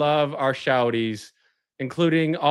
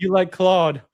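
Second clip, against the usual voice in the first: fake British accent, higher pitch; 3 semitones higher, 3 dB louder than usual. Retelling what was said to an ex: put-on British accent. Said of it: "talk in a British accent and be like a different character".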